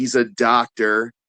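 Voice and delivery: sarcastic scare-quote tone on "doctor". Describing someone's doubtful credentials: sarcastic air quotes on "doctor". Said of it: "hear the air quotations in my voice".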